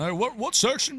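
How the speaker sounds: very high-pitched, thrilled, excited caller voice. Imitating a prize winner who calls in to ask: imitating a winning caller. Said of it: "What about the one that calls in?".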